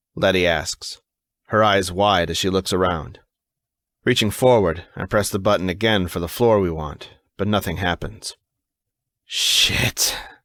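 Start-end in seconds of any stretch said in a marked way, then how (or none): 9.3-10.2 hissed, angry hissing. Reading a story aloud, the narrator pressing a broken elevator button: hissed. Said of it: "I hiss".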